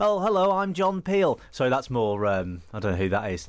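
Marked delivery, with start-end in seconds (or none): 0.0-1.4 very high-pitched Scouse accent. Mocking someone pretending to be a Scouser: Scouse accent as John Peel. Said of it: "The Scouse accent there".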